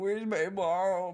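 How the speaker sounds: speaking in a dog's voice. Watching own dog with another person, voicing the dog. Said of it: "He's like".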